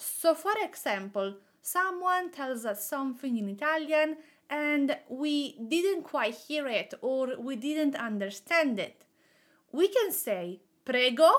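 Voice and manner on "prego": prego with pitch rising at the end. Asking someone to repeat in Italian: rising pitch on prego. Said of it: "this is a question, so we are raising our intonation at the end of this word".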